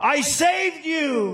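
high, slow crying out.

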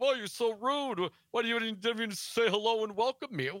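put-on defensive manner. Recounting how he reacted to pointed questions, the speaker imitates him: mock-defensive. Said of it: "he got all defensive".

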